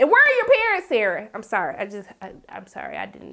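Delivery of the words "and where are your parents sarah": yelling, higher pitched. Reacting to a character in a tv episode: screaming. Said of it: "I didn't mean to scream like that".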